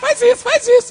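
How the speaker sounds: very high, loud, whiny devil voice.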